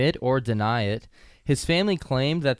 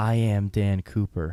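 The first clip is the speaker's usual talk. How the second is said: acted-out whisper, lower pitch; 5 semitones lower than usual. Retelling a dying man telling his wife a secret; retelling a deathbed whisper. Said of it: "he whispers to her".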